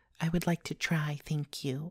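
timid, meek voice. Reading a fairy tale aloud, the maid answers the royal servant, meekly. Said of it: "meekly said Cinderella".

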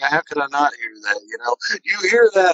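high, fast, rattled, frightened disbelief.

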